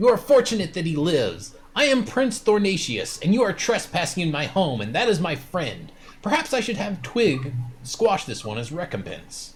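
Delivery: high-pitched, small regal voice. Narrating a scene where the prince addresses trespassers, in Prince Thornatius's small voice. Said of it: "You hear the same small voice again".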